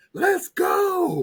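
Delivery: very high, loud, fired-up shout, acted out. Imagining switching lives with a sibling: playing an excited fireball. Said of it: "just a fireball".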